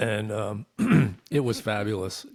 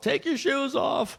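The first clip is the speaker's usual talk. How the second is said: mock yelling at top of lungs, much higher. Recounting going through the scanner line, quoting the guy: retelling a screamed order. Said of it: "this guy is screaming at the top of his lungs".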